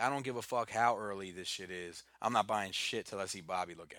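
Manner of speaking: ordinary delivery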